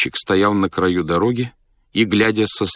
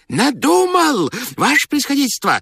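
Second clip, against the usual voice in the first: very high, strange, swooping, overjoyed shout. A man bursts into the general's study, joyful shout, unlike his voice. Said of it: "закричал он радостно, не своим голосом".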